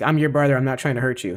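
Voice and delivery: ordinary talk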